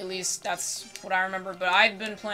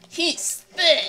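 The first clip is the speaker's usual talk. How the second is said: put-on game announcer voice; 9 semitones higher, 4 dB louder than usual. Imagining the fight announcer calling out the line: imitating a game announcer. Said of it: "Imagine if the announcer said that".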